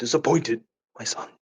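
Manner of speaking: breathy, hushed near-whisper delivery. Acting out a friend's joke line: imitating Jason. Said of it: "That's Jason right now, just going to the joke like".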